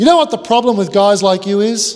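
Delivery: loud booming voice. Retelling a man at a dinner party who plonks down his wine, big, loud voice. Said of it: "loud voice".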